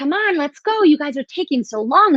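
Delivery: playful put-on near-yell. Retelling how she hurried them along during a reading: imitating someone almost yelling. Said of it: "almost yelling at us, but in, in a funny way".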